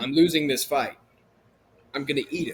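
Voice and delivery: ordinary talk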